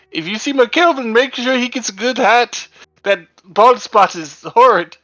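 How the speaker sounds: loud, high-pitched calling out. Replying to a telepathic message by yelling aloud in character: character yelling from afar. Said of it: "a random passerby yelling".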